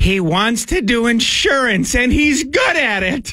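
put-on very high, worried, concerned granny voice. Describing a Geico ad to another speaker, imitating its concerned grandmother. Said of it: "like a concerned grandmother".

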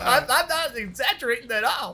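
high, animated cartoon rabbit character voice. Insisting to the other speaker the voice is accurate: Roger Rabbit voice. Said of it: "it sounds just like this".

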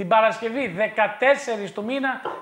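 loud, high, hyped promo announcer voice.

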